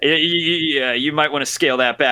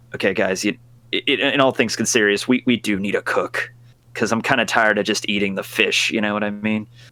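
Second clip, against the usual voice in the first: stage whisper, half-whispered; 5 semitones lower than usual. In character, sitting down beside the crew to half-whisper to them: half-whispering to the crew. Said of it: "whisper over at them".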